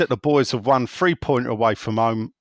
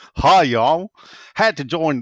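bad, clumsy put-on American accent; 4 semitones higher, 3 dB louder than usual. Reading out a message from someone from Hershey in a bad American accent. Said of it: "I'll try and do an American accent".

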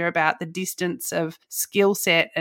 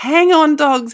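put-on scream, higher and louder; 9 semitones higher, 9 dB louder than usual. Retelling cheering alone in the car during a close game: imitating a scream. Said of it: "I was screaming".

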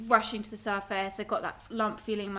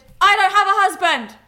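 blurted, rushed, very high, very loud panicked yell; 11 semitones higher, 17 dB louder than usual. Retelling her answer to a man who asked about her husband, retelling a panicked shout. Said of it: "I shouted".

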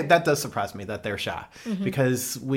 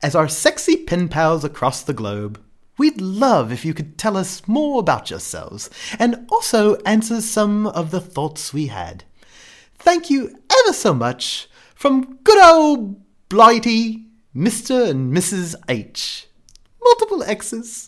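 put-on fussy, high, loud old British lady voice; 8 semitones higher, 6 dB louder than usual. Reading out a sign-off message to pen pals: Mrs. Doubtfire voice. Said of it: "It almost sounded a bit like Mrs".

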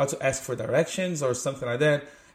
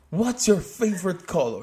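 put-on, laid-on American-style English accent; 4 semitones higher than usual. Imitating a school english lesson phrase: put-on american english accent. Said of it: "you sound so English, American".

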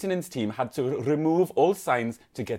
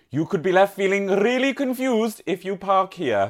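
put-on Welsh accent, pitched up; 6 semitones higher, 3 dB louder than usual. Reading a news item from Wales Online aloud, in a Welsh accent. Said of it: "I'm going to have to read it in the accent".

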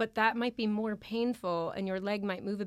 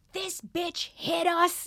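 put-on, loud, high, very slow, drawn-out scream; 8 semitones higher, 5 dB louder than usual. Recounting being carried on a stretcher after being hit while parked, retelling their own scream. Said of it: "And I'm screaming like".

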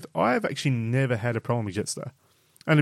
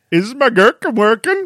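loud high-pitched squeal; 10 semitones higher, 11 dB louder than usual. Asked by the other speaker to repeat the title, speaker does a Swedish Chef impersonation. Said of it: "In your best Swedish chef impersonation".

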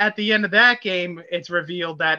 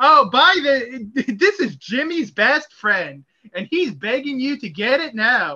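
put-on pitched-up, old-timey 1950s radio ad announcer voice; 6 semitones higher than usual. Describing an in-game advertisement, the speaker does a 1950s ad announcer voice. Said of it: "one of those like 50s like voice advertisement guys".

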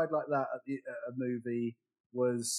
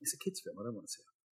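much softer whispered dismissive aside. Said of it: "I was like".

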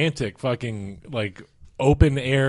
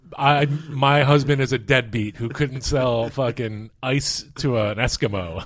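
normal talking voice

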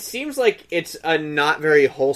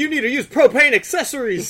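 mock yelling, higher and faster; 10 semitones higher, 5 dB louder than usual. Imitating people dressed as a character bombarding others, retelling a yell.

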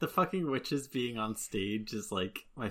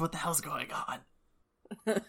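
acted-out whisper; 6 semitones higher than usual. Retelling what one actor whispered to another onstage mid-scene, retelling a whisper. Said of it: "he's just whispering to Tom John".

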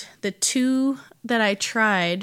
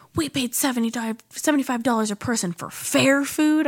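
put-on angry, worked-up yelling rant; 4 semitones higher than usual. Retelling how an angry dad at a nearby table yelled at his wife: imitating an angry dad yelling. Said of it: "a dad losing his mind ... he was yelling at his wife".

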